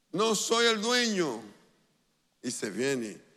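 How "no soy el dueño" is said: shrill, very high yell from a distance. Retelling what the man shouted back, retelling a man's shout. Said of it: "Y el hombre grita ya".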